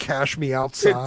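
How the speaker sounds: ordinary talk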